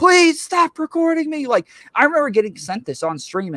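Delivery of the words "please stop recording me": mock very high, shrill, loud screaming. Retelling a woman curled up on a store floor: imitating someone screaming.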